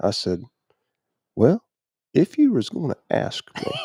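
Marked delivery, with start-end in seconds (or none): 1.4-3.7 very high-pitched private aside to oneself. Retelling own words to the Lord while hunting: imitating talking under breath. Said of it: "I was talking under my breath".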